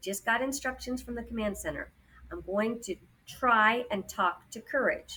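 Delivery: ordinary delivery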